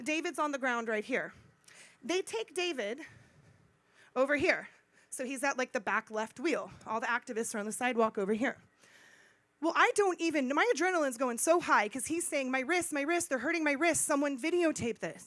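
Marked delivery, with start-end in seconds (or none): none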